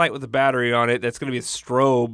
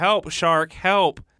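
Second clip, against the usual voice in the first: light, toned-down put-on man's yell, kept small; 4 semitones higher than usual. Telling a joke about a man in the sea: imitating a man yelling for help. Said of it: "a man in the sea yelling".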